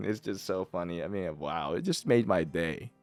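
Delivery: amused speech broken by giggles, laughing through words. Reacting to a funny message, laughing while talking. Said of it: "I don't know why I'm laughing so much".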